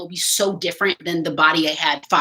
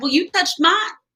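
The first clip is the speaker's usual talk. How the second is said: mock, very high-pitched, sarcastic jab; 9 semitones higher than usual. Retelling a reply to strangers reaching for the belly: retelling a sarcastic retort. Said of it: "I'm too sarcastic for, um, entitled strangers".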